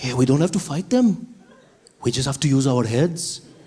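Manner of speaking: put-on Indian accent throughout. Acting out two workers plotting against the british: indian accent. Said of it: "They still had the Indian accent".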